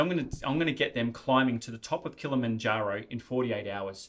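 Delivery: ordinary talk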